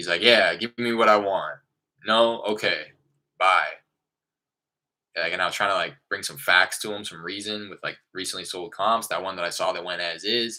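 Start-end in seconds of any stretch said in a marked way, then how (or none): 0.2-3.7 put-on brusque, curt, dismissive, loud and slow. Retelling a call with a firm seller: imitating a curt, dismissive seller. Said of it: "hear it in the demeanor of his voice".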